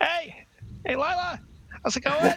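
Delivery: very high, drawn-out, obnoxiously sociable tone. Retelling how John greets everyone during a long walk, imitating John being obnoxiously social. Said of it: "just obnoxiously social".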